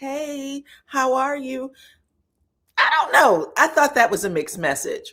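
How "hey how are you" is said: high, slow, drawn-out, syrupy-sweet voice. Complaining about a mixed message, the speaker imitates Tisha's syrupy-sweet greeting. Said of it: "Tisha's being all syrupy sweet".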